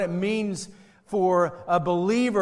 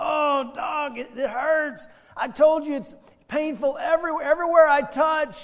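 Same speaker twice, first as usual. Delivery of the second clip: high, pained, stretched-out wail of pain; 8 semitones higher than usual. A man touches his knee as the doctor asks, screaming in pain. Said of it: "the man screams in pain".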